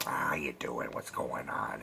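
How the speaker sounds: low whispered gravelly voice. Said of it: "[name] is like".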